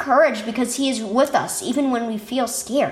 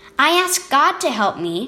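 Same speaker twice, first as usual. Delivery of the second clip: plain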